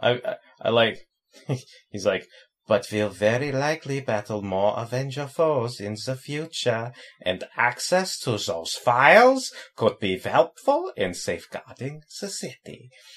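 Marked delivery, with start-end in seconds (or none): 2.7-12.9 sudden put-on German accent. Retelling what he said, in a sudden German accent. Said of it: "why'd you suddenly get a German accent?".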